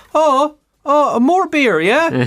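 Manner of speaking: very high, very slow Irish mammy voice. Imagining a smart fridge that talks like an Irish mammy: Irish mammy voice. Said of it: "programmed like an Irish mammy".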